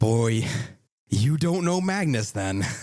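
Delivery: amused, half-laughing, giggling through the words. Voicing a shop owner answering the party's praise of Magnus: giggling while talking. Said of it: "He starts laughing almost, like, giggling".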